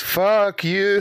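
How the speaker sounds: strong, high-pitched goat voice. Pitching a joke, the speaker delivers the line in a very strong goat voice. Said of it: "in a very strong goat voice".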